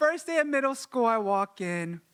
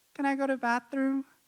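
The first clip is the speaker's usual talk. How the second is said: acted-out sheepish, embarrassed, shamefaced tone; 3 semitones higher than usual. Retelling asking to leave class after a mistake: imitating own shameful request. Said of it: "me having to shamefully raise my hand".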